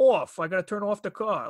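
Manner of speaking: Long Island accent. Showing how people on Long Island's South Shore say off: imitating a South Shore Long Island accent. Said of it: "my Long Island accent".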